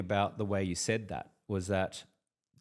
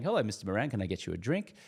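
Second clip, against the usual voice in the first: put-on smiling, friendly tone. Imitating a waiter offering a drink: imitating a smiling waiter. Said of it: "a smiling assassin is the waiter or the waitress".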